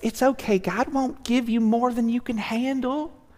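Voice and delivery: soft, high put-on Southern church lady accent. Quoting what church friends would tell the speaker in hard times, in a Southern woman voice. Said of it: "Sorry for the Southern woman voice".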